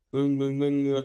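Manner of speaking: mock mumble, low and mumbled.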